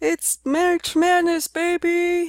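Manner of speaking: very high, loud, hyped announcer voice belted out. Quoting what a well-known college basketball announcer is known for saying, Dick Vitale impression. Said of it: "known for his voice and saying".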